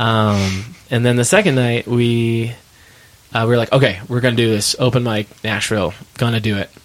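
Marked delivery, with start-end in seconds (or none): none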